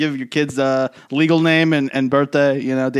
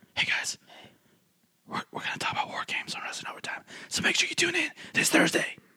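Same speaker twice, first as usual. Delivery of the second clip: hushed, very quiet, barely-there whisper; 12 dB quieter than usual. Addressing the audience right after saying to whisper it, whispering. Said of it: "Whisper it".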